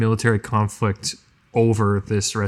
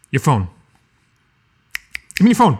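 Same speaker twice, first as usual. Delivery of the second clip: loud, thrilled, insistent, too-eager, swooping excited voice; 4 semitones higher, 6 dB louder than usual. As Louis, turning to Freddy and asking for his phone: loud demand. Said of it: "Shh. You might scare it away".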